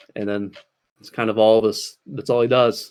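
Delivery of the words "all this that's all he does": normal talking voice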